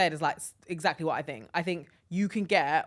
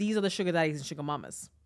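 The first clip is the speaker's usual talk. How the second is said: ordinary delivery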